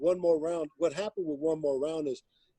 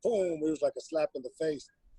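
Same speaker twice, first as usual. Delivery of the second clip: ordinary talk, nothing marked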